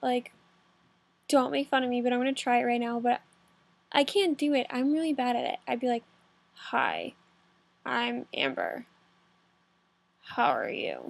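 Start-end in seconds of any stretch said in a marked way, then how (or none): 6.5-11.1 froggy croak, whispered, soft and very slow. Speaker tries a voice while admitting being bad at it: frog-like voice. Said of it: "I just sound like a frog".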